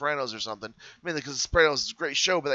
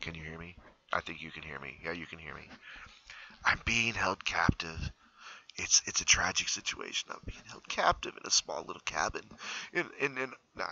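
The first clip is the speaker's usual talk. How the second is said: very soft hushed whisper with barely any voice; 9 semitones lower, 11 dB quieter than usual. Answering question eleven, where do you live, so they can't hear, whispering. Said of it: "I have to whisper this".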